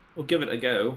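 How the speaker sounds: put-on, home-invented, made-up British accent. Repeating the other speaker's words back: mock british accent. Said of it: "I wasn't making fun of your accent".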